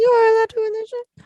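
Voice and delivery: put-on high, loud childlike voice. Playing him in a role play, answering her question: imitating Mohammed's childlike talk. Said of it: "I'm gonna be Mohammed".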